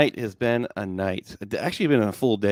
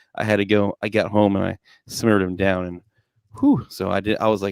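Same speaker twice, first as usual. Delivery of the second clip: plain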